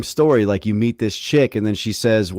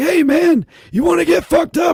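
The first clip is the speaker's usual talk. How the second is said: strange, damaged-sounding, high yelling voice; 3 dB louder than usual. Speaker retells a man who kept talking to him, imitating the man's odd yelling voice. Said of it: "he talked like this because there was something wrong with his voice".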